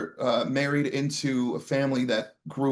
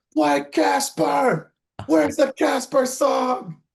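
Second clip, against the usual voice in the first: put-on shrill, very high, loud shouted scream; 13 semitones higher, 5 dB louder than usual. Recalling standing on a chair between songs at the show: retelling own screaming. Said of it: "I'm standing on my chair screaming".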